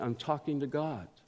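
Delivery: soft, bashful, sheepish tone. Retelling a story, the speaker gives the shy man's answer: retelling a sheepish reply. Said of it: "responded sheepishly".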